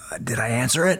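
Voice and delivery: acted, meek, timid voice. Retelling meeting a man who once emailed him, the speaker is retelling a meek reply. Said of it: "with a real meek voice".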